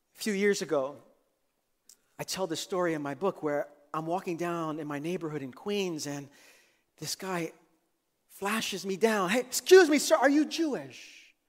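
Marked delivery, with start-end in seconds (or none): 9.3-11.3 put-on loud hollering, yelled. Retelling how a stranger on the street called out: imitating a man screaming. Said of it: "And he screams again".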